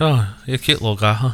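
put-on speaking in British accent. Pitching a commercial where the Geico gecko meets Baby Yoda: Geico gecko British accent. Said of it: "like with like his British accent".

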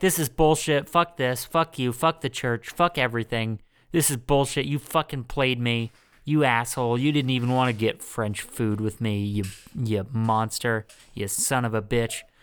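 put-on furious, angry ranting. Retelling a movie scene where a character complains in the car: imitating an angry complaining rant. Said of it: "so he's complaining".

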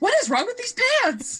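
frantic, very high-pitched, rapid rattled-off outburst. Retelling a scene where Ross can't get his pants on: frantic Ross impression. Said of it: "'Cause he's so frantic".

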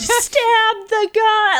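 put-on loud, very high, shrill shout. Retelling others drunkenly screaming at the screen: imitating screaming at the screen. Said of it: "screaming at the screen".

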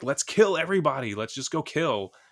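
frenzied, high, loud, all-out shriek. Retelling a film scene where she screams at gangsters: imitating a screaming woman. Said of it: "she just screams at him".

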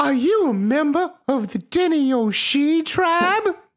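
sweet, very high-pitched, pretty horse voice. Narrator voicing the prettiest horse questioning the player, prettiest horse voice. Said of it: "What's your prettiest voice?".

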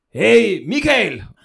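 loud, rough, high-pitched hollering shout. Retelling a joke, soldiers call across to the other trench: imitating a shout. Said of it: "pludselig råber de så".

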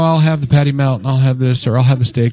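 normal talking voice

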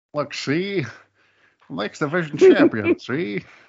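put-on loud, swooping old-time 1920s gangster mobster voice. Playing the X Division champion as a mobster, in a 1920s mobster voice. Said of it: "Why do you always have a 20s mobster?".

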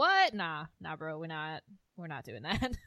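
swooping, lively, swinging up and down. Retelling a scene from the show: imitating Suzanne refusing. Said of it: "that was a really, really good impression".

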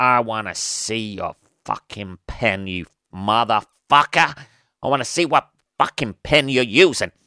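bad, dodgy, put-on New York accent. Acting out a hypothetical exchange, in a dodgy New York accent. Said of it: "Dodgy New York accent there".

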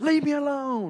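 very high, all-out full yell. Retelling standing up to a bully in a bathroom: imitating yelling as loud as possible. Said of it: "I yelled at him as loud as I could".

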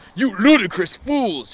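furious, very high, loud angry yell. Dumbledore shouts angrily at the narrator and Draco, shouting angrily. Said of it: "he shouted".

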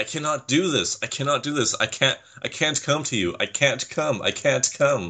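high, frantic, spiraling, panicked freak-out. Recapping a man on camera, the speaker imitates him freaking out. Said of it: "where he was freaking out saying".

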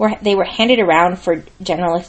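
plain

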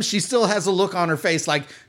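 ordinary talk, nothing marked

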